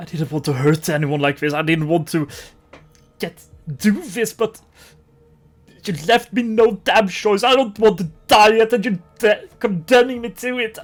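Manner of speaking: panicking with heavy breathing. A villain whose attack was just nullified answers the group, panicked and breathing heavily. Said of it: "Seeing their attack being nullified like nothing, [name] starts breathing heavily, and the panic onsets even harder. / [name] starts breathing heavily, and the panic onsets even harder. / The gang div".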